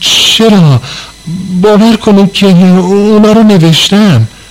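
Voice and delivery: trembling, quavering high-pitched voice. A student answers his teacher, who accuses him of skipping homework; trembling voice. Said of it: "با صدای لرزونی جواب داد".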